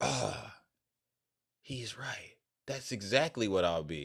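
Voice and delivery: rural, country-sounding voice. Imagining a Trump supporter in rural America reacting: imitating a rural Trump supporter. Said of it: "imagine there's a Trump supporter in rural America".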